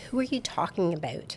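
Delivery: Canadian accent with wide pitch range.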